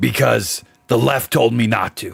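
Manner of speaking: put-on ranting talk-show host voice. Showing how a long-running host sounds when he talks: Alex Jones impression. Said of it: "he sounds like this when he talks".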